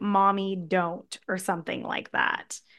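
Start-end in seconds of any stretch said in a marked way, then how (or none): 0.0-1.2 put-on small child voice, much quieter. Describing how Mickey voiced a line, imitating a child's voice. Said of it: "making like a child's voice saying like".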